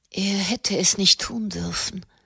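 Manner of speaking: soft murmuring voice. Katharina, as if listening to her own heartbeat, murmuring. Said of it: "murmelte sie".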